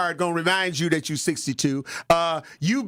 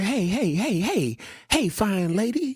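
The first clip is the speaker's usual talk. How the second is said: slow voice of a woman in her twenties; 2 semitones higher than usual. Retelling how a twenty-four-year-old woman spoke to an older man: imitating a twenty-four-year-old woman. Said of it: "she's twenty-four, but she was like".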